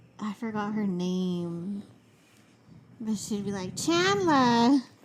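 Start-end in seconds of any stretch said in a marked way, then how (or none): 3.8-4.8 put-on Jersey accent, much higher. Imitating a sitcom girlfriend calling her boyfriend's name, put-on jersey accent. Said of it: "Like a Jersey accent".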